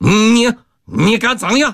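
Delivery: very high, very slow, drawn-out, terrified panicked yell. Reading a man facing a brawl among gamblers; panicked shout. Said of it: "惶恐的叫喊".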